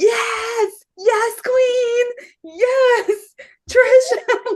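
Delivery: very high, slow, stretched-out cheering yells. Retelling cheering at a performer during a show: imitating their own yelling. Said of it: "we were just yelling".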